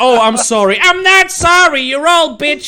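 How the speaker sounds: put-on shrill, loud American accent. Retelling what a woman with Tourette's blurts out; put-on American accent. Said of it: "she has the American accent when she".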